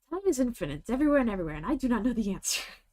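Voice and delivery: upbeat, chirpy salesman-like computer voice, yet bored. Asked to say it as the Hitchhiker's Guide supercomputer, Hitchhiker's Guide supercomputer voice. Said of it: "say it in the voice of the supercomputer".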